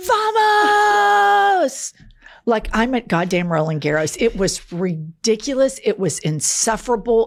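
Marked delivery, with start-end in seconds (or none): 0.1-1.9 very high, shrill, drawn-out, top-of-the-lungs triumphant scream. Retelling screaming at friends after winning a pickleball point: retelling a scream of Vamos. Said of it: "I scream at the top of my lungs".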